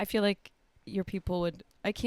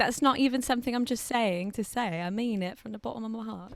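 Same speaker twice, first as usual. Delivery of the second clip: fake British accent held throughout. Insisting the compliment to the other speaker is sincere, in a put-on british accent. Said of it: "that's a British accent, just in case".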